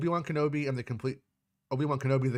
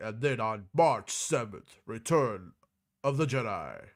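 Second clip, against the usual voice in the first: put-on vintage home-video promo announcer voice; 2 semitones lower than usual. Recalling the announcer from old VHS tapes, doing an old VHS trailer announcer voice. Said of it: "guy's voice from the V H S? He was like".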